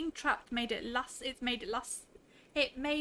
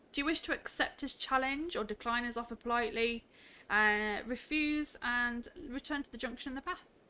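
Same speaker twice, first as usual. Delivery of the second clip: ordinary delivery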